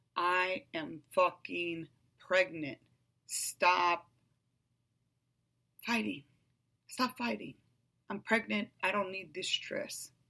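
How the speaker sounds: ordinary talk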